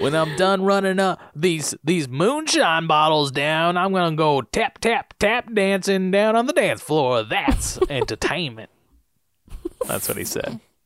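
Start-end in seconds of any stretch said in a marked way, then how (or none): 0.0-8.7 put-on Southern-accented character voice. Role-playing with friends, player voices a character: southern accent. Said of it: "why has everything got to be Southern?".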